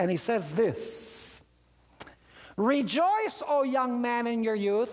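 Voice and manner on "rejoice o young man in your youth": ordinary talk, nothing marked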